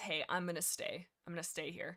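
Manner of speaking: ordinary delivery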